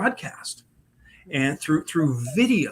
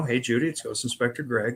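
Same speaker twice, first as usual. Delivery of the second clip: ordinary delivery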